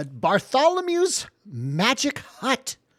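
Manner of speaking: put-on gnome voice, swooping and sing-song. Narrating a stop on the group's journey: gnome voice. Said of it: "That was the gnome's voice".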